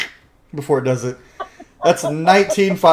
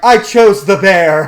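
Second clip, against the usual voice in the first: mock very slow, loud, stretched, drawn-out yell; 4 semitones higher, 5 dB louder than usual. Retelling a friend shouting from his back: imitating someone yelling loudly. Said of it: "like, really loudly".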